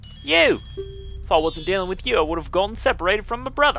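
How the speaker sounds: high, put-on fairy voice in an English accent. Solo game playthrough, the player voicing the fairy character: English-accent fairy voice. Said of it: "and [name]'s going to be the one with the English accent. / a helpless little girl is asking you, / I want to do the English accent".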